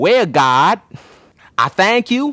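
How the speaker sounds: put-on Louisiana accent, pitched high. Retelling a girl's prayer, trying to do her Louisiana accent. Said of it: "I trying to do the Louisiana accent".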